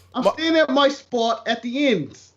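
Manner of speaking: bad put-on English accent. Joking about staying in the ends, with a bad put-on english accent. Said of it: "that is Don Cheadle level in accents".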